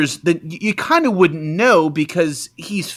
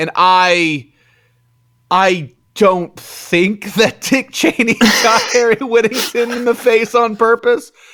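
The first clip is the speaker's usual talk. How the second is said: hesitant, halting delivery with pitched-up, drawn-out I; 6 semitones higher, 4 dB louder than usual. Stating an opinion after a joke, with mock hesitation. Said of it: "you hear the hesitation in my voice".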